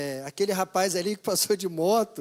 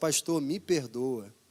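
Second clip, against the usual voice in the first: low, tearful voice, crying through sobs; 5 semitones lower, 4 dB quieter than usual. A pastor retells a church sister coming to him in tears: imitating a woman crying. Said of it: "Ela veio chorando".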